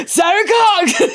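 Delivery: very slow, dragged-out, high, pushy holler. Retelling how a passerby at the restaurant table kept calling a name: imitating a man shouting. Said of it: "just shouting my name at me".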